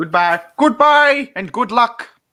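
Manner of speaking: loud high-pitched voice. Speaker signing off at the end, with a William Hartnell impression. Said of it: "That's my William Hartnell impression".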